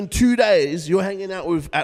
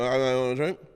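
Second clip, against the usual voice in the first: mock drunk speech, lower and quieter; 4 semitones lower, 5 dB quieter than usual. Retelling a first drunken meeting at a bar: imitating own drunk talk. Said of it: "That's how I was talking".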